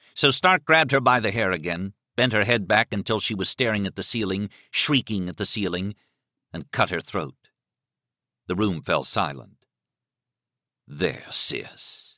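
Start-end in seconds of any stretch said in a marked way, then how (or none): 10.9-12.0 soft, tender, hushed near-whisper. A man speaks to the woman he has just killed, tender. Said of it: "he said tenderly".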